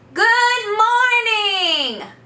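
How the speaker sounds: very high, bright calling-out voice. Demonstrating a greeting as if calling over a fence to a neighbor, high-pitched calling voice. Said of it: "in a high-pitched voice, like I'm calling over a fence to my neighbor".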